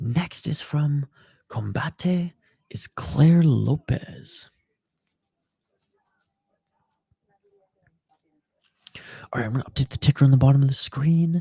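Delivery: speaking in a whisper. Commentating on fighters late at night while roommates sleep: whispering. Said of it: "the reason I'm whispering is 'cause it's so freaking late".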